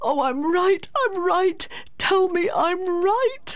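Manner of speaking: put-on very high, childlike crying out. A man confides everything to a woman, gripping her hand, crying out like a child. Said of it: "he cried out as a child".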